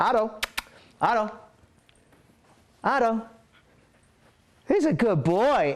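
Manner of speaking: cheerful, excited, high, happy voice, drawn out. Calling the dog Otto during a training demonstration, in a high, happy voice. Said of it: "I'm talking in a high, happy voice".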